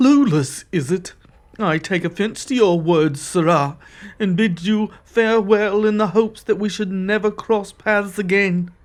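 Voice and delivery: bristling, supercilious, offended, haughty archaic speech. A warrior from another plane, called clueless, takes offense and bids farewell: offended and arrogant. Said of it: "He carries himself with an air of supercilious arrogance. / You see a trim, muscular man, dressed in clothing that is comparatively drab and mundane compared to most of the outfits you've seen in this".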